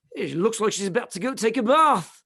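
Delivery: put-on South African accent. A speaker quotes one of their teachers: South African accent. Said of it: "in his South African accent".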